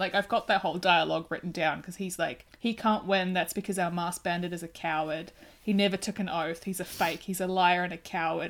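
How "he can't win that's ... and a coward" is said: ordinary talk, nothing marked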